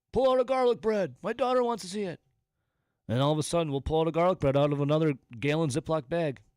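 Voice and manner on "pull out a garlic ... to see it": mock very high yelled-out line. Acting out a rich father calling down to people below: imitating a father yelling out. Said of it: "And he'll yell out".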